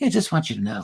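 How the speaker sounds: put-on English accent. Retelling what she said on meeting again: imitating an English accent. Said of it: "He's doing the accent".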